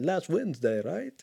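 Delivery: vampire count voice. Speaker repeats when a video game came out, in a Count Dracula voice. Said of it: "I don't know why I said it like that".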